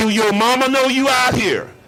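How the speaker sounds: loud, mean, play-acted vicious, cutting taunt. Retelling an opponent's taunt before the snap: imitating Deacon Jones's mean, vicious voice. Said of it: "he said it in such a mean, vicious way".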